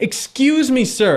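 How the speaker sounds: calm, polite voice. Acting out asking a stranger for help, calmest possible tone. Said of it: "in the most calmest tone you have".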